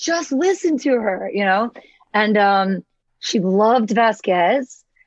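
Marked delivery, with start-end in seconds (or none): 0.0-1.3 put-on high, childlike yell. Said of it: "She was just yelling at the screen".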